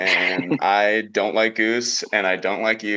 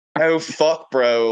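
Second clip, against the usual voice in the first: put-on Philadelphia accent, higher; 6 semitones higher, 4 dB louder than usual. Explaining that a character they voiced picked up one: Philly accent. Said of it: "that just comes out".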